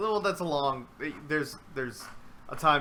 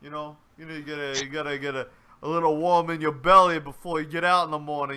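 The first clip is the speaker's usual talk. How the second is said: put-on, mock Italian accent. Joking about how Italians start the morning: put-on Italian voice. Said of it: "that's the Italian way".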